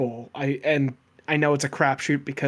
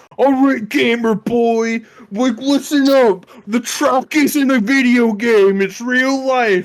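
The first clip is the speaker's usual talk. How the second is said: loud, high, drawn-out hollering yell; 9 semitones higher, 9 dB louder than usual. Explaining why they laughed the whole time, imitating some dude yelling. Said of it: "some dude yelling".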